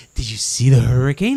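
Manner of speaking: loud, all-excited, thrilled, acted-out voice. Retelling what mom asked after the hurricane: imitating mom, all excited. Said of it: "all excited".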